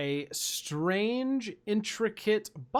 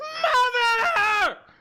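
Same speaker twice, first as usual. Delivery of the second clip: shrill, very high, very loud, drawn-out yell; 8 dB louder than usual. Voicing a captive who wakes and sees the party: yelling in character. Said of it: "he just yells".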